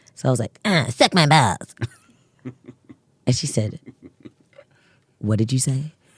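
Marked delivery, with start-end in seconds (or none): 0.7-1.8 put-on drawling cartoon kid voice. As a child, asked by mom what was said, the speaker answers in Cartman voice. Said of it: "the Cartman voice".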